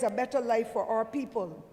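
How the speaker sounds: plain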